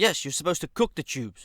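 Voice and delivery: play-acted mean, hostile, intimidating tone. Retelling the coworker's reply about cooking tubes: imitating a nasty tone. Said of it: "with a nasty tone".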